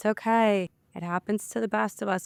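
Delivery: mock soothing, calming voice. Retelling how a man tried to calm the sobbing speaker down, imitating someone soothing. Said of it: "calming me down".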